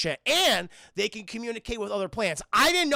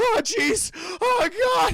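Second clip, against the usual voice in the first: put-on nervous stammering cartoon boy voice, higher and louder; 10 semitones higher, 4 dB louder than usual. Recapping a movie scene, imitating a soldier character: Morty voice. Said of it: "He's like fucking Morty from Rick and Morty".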